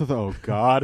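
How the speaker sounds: acted-out, mock panicked tone. Recalling watching a movie, the speaker acts out a panicked 'oh god'. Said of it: "the panic in your voice".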